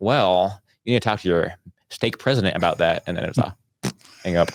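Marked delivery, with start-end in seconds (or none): 0.0-3.0 polite but very strict put-on prim lady voice.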